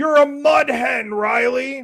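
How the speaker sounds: play-acted, high heckling yell. Recalling the man behind them in the crowd at a game: retelling a heckler's yell. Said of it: "the dude behind me yells".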